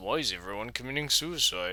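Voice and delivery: quiet, sarcastic tone.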